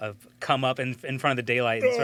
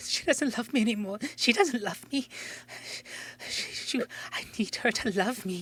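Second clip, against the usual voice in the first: very high, tearful, weeping crying woman's voice; 11 semitones higher, 4 dB quieter than usual. Voicing a woman heard crying in a cave: put-on crying woman's voice. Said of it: "a woman, crying, and you just hear".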